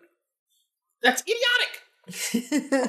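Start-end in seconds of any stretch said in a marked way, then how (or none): 1.0-2.9 slow, high, drawn-out, mock prim tone. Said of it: "It's years of reprogramming".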